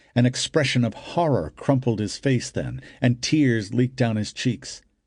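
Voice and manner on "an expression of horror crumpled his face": ordinary delivery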